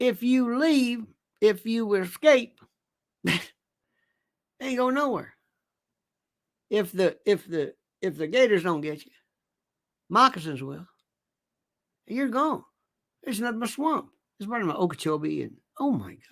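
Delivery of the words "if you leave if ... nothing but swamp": high, rough put-on rural country voice. The speaker retells a man's words: imitating a redneck guy. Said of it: "kind of a redneck guy, talks like that".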